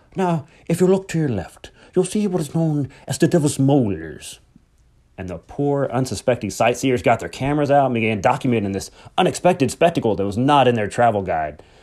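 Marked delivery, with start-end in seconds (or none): 0.2-4.4 Irish brogue laid on full, pitched up. Retelling a man pointing out rocks to sightseers, in a full irish brogue. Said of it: "with his accent on full Irish brogue".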